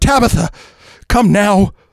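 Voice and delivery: very high-pitched, loud, beseeching, pleading. As the doorbell rings, Eleanor begs her mother Tabitha to come now: beseeching. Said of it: "beseeched Eleanor".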